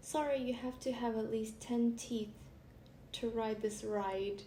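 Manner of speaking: ordinary talk, nothing marked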